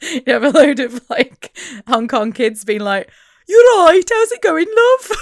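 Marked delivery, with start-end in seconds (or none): 3.5-5.2 put-on high, loud Birmingham accent. Imagining Hong Kong kids picking up the teacher's accent, in a Brummie accent. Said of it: "adopt the Brummie accent".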